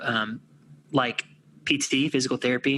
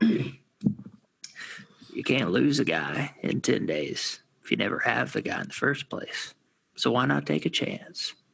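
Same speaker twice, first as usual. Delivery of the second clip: imitated gravelly, creaky voice. Giving a description to the group, which may flop or win, in your best McConaughey impression. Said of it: "I'm going to do my best McConaughey impression".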